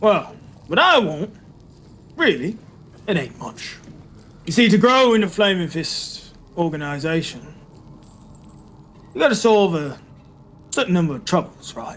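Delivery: confident, assured tone of someone in control. Game master answering the players who ask what he wants, in Captain Zodge voice. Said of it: "The name's [name]. Remember the [name]? Loyal member by that. Spent my whole career in this organization. / And so it becomes very obvious to you that [name] knows what you did, / And so what I propos".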